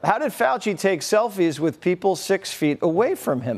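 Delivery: ordinary talk, nothing marked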